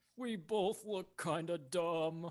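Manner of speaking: put-on bear character voice. During a tabletop game, a player speaks as Orchestra: Orchestra's bear voice. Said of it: "Orchestra says in the bear voice".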